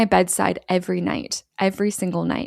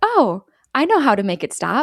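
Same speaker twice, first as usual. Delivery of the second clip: play-acted abrupt switch to breezy, sing-song cheer; 4 semitones higher, 4 dB louder than usual. Retelling how a caller ignores a question and turns cheerful: imitating a suddenly cheerful voice. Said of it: "becoming, like, suddenly cheerful".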